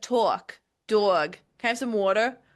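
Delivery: put-on, exaggerated caricature Jersey accent. Speaker mimics how Danielle talks, imitating Danielle's caricature Jersey accent. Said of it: "caricature of a Jersey accent and she talks like that".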